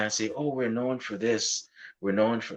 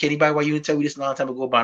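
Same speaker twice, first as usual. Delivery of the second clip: put-on teasing, ribbing Guyanese accent; 7 semitones higher, 4 dB louder than usual. Retelling what he told a man whose father is Guyanese, Guyanese accent. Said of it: "in my Guyanese voice".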